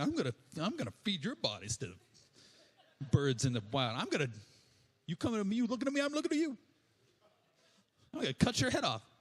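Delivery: cheeky, saucy tone with swooping pitch. Retelling the Bible story, voicing David taunting Goliath: saucy David taunt. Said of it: "David just gets saucy".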